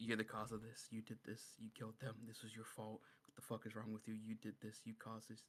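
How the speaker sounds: very quiet, hushed half-whisper. Recalling trying to cut off their own hand, re-enacting half-whispering to oneself. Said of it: "I'm like whispering to myself".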